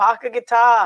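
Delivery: loud, exaggerated Boston-area accent laid on thick. Describing how Parker guitar factory workers talked: exaggerated Massachusetts accent. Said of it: "they were all speaking that way. ... I'm exaggerating it right now".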